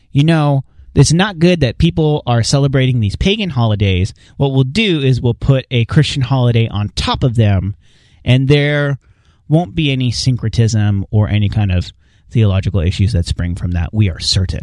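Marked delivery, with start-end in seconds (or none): none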